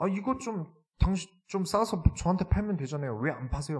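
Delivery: high-pitched, angry voice.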